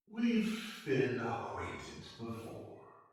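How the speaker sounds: thin, wispy, airy character voice. A game master voices a hooded figure answering a player's question, in a wispy voice. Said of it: "the figure in that same wispy voice says".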